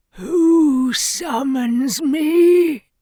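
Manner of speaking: shrill, very high, rasping demon voice. Narrator reads a demon's first words on appearing, in a raspy demon voice. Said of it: "It scowled at Kian as it rasped".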